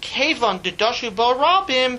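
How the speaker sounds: ordinary talk, nothing marked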